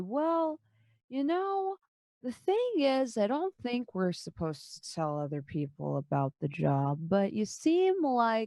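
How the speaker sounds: unhurried, slow delivery over every word. Narrator voices Gil answering a player's persuasion, speaking very slowly. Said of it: "Gil says very slowly".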